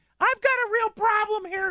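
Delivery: woman's voice, pitched very high. Retelling a phone call from a woman in northern Wisconsin, imitating her voice. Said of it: "Her voice does not sound like that".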